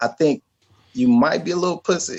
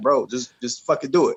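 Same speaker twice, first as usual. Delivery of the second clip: usual speaking voice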